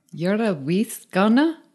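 put-on Scottish accent, being practiced. Repeating a Scots phrase back to check it: practiced Scottish accent. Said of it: "But I'm practicing my accent".

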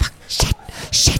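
hushed whisper. Describing performers whispering curses while a conductor led them: whispering the curses. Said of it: "were like whispering like".

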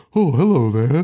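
politely proper, prim monster voice. Retelling a worm monster's first line: imitating a proper worm monster voice. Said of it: "He's, he's so proper".

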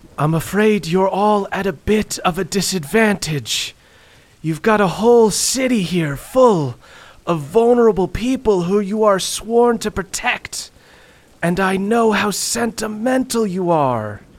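booming wraith voice. Voicing the Wraith taunting the heroes across the city: booming wraith voice. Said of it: "You hear his voice boom through the empty city".

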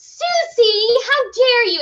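screaming pitched very high and drawn out. Acting out a student's first response to getting paint on a dress: mock screaming.

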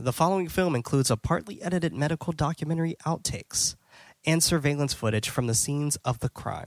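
ordinary delivery

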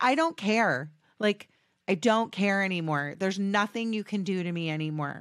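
usual speaking voice

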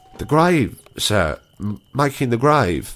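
stammering. The sexton answers the goblin's question about his work: stammering. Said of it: "stammered the sexton".

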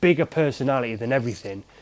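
ordinary talk

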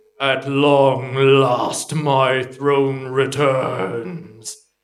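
low, deep, rumbling voice. The game master voices an unseen presence echoing around the players, deep rumbling voice. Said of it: "A deep rumbling voice echoes all around".

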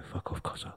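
very soft whisper under the breath. Retelling telling an intruder to leave quietly: whispering a retold line. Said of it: "I whispered it".

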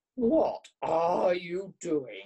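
loud, slow, drawn-out growl. Narrator reading a character's question to the travellers, growling. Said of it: "He growled".

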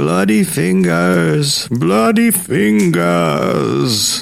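high, rasping, creaky ghostly moan. A ghostly figure staggers from the closet at the man, moaning. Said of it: "it moaned".

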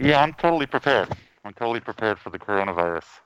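muffled voice, talking through a face mask. A podcast co-host answers while still wearing a face mask, muffled. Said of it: "You sound like you're talking either out of a hole or stuffing your face".

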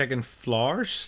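put-on Irish accent. Asked to say a phrase in an irish accent, the speaker tries it: irish accent. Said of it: "Say it in an Irish accent".

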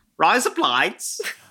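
mock Australian accent, a bit high. Asked to call a drag race start in Australian dialect, Australian accent. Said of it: "drag race down under in your Australian".

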